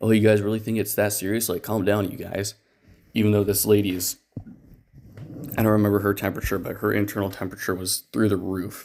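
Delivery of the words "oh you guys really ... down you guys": put-on, belittling, teasing tone. Retelling how the husband watched and mocked the crew: imitating a mocking tone. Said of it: "kinda mocking us".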